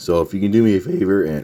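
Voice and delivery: voice cracking. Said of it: "voice crack".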